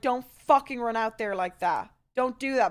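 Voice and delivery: angry, motherly scolding tone. Retelling a phone call, imitating an angry mom. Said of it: "My mom was so mad".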